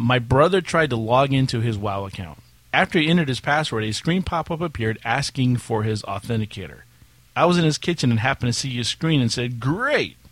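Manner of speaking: normal talking voice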